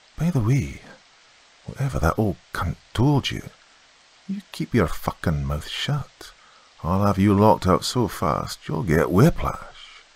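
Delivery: hushed, menacing stage whisper. Reading a story aloud, a man threatening the narrator: whispered threat. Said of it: "whispered in my ear".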